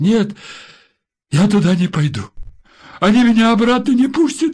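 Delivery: very high, loud, frightened cry. Reading a story, a woman refuses an officer's order, frightened. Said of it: "испуганно сказала она".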